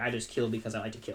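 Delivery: plain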